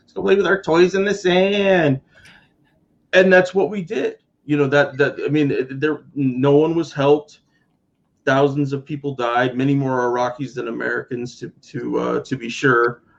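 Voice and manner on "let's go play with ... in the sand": put-on childlike voice, much higher. Retelling a line from someone's sketch, in a childish voice. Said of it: "it's in a childish voice".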